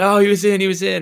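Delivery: put-on crowd shout. Recalling a replay on the stadium screen, imitating a crowd yelling. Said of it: "everybody's like yelling".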